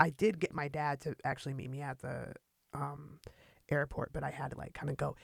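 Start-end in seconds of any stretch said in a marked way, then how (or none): none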